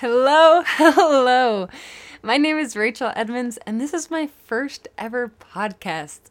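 very loud, nervous, laughing voice. Introducing herself on her first podcast, nervous laughing while talking. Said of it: "If you can't tell by my laughs, I'm a little nervous".

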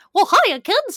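very high, loud, bad squeaky cartoon mouse impression.

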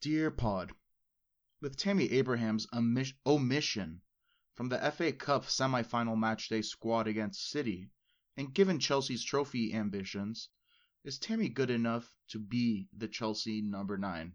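very formal, read-aloud letter delivery. Reading out a listener question to a podcast co-host: very formal voice. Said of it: "get ready for my very formal voice".

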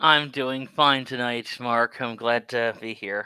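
not sounding happy. Greeting the host when introduced, unenthusiastic. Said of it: "Don't sound so happy about it".

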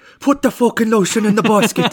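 put-on Irish accent, loud and very high-pitched. Retelling a movie scene, the speaker repeats a character's line in an Irish accent. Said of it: "Or should I do it with an Irish accent?".

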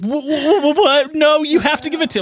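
high, shocked, angry outburst with drawn-out "what". Retelling a woman's reaction over a $100 bill deal, acting out shocked anger. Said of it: "she's so like shocked and angry and surprised".

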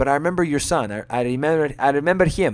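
put-on Greek accent on English words. Recounting a meeting with Giannis and the speaker's mum: Giannis's Greek accent. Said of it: "in his Greek voice".

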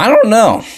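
sudden voice crack breaking very high. Answering a viewer's question about girls: voice crack. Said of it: "that was a voice crack".

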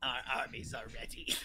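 strange, soft, hushed, slithery snakelike voice. Quoting a character from a finished read-through, in Dante's weird snake voice. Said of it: "Dante's weird snake voice".

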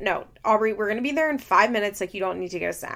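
put-on short, curt, snappish tone. Retelling a parent refusing a child's snack request: imitating someone snapping. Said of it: "kinda snaps at her".

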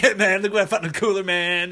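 easygoing, relaxed, laid-back buddy voice. Retelling what a chilled surfer coworker said while huffing at work: imitating Job, a chilled surfer guy. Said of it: "he was very chilled".

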